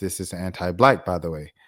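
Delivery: ordinary talk, nothing marked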